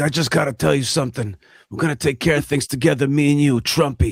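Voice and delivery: raspy, gravelly mobster-style voice. Mocking Prime Minister Netanyahu's voice after a meeting: raspy Netanyahu impression. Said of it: "what's with the raspy voice, Prime Minister Netanyahu? What is he, the Godfather out there? He's like".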